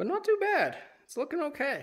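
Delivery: out of breath, voice very high-pitched. Commenting on progress while working on a car, out of breath. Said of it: "I'm out of breath".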